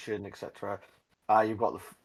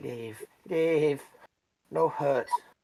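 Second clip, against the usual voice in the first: goblin voice, higher; 5 semitones higher than usual. Voicing a goblin that is pinning someone by the arm: goblin voice. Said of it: "he's just going".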